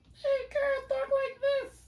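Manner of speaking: very high, squeaking voice. Imitating a speaker at an eighth grade graduation: imitating a squeaky voice. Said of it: "she talks so squeaking on the microphone".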